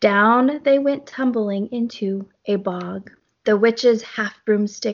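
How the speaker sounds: plain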